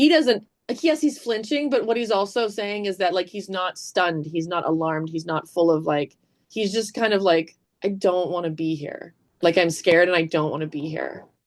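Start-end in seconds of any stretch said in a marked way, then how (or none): 7.8-11.2 put-on scared, resigned tone. Explaining a character's reply in a scene by voicing it: imitating a resigned tone. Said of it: "is so resigned".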